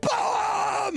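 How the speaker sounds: high-pitched yelling. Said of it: "That's what you're yelling".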